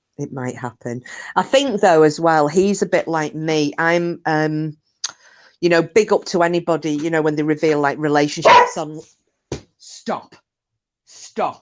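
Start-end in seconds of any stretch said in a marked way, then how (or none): 9.8-11.6 earnest, hushed, serious voice. Speaker telling the others to stop, in a serious voice. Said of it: "That's my serious voice now".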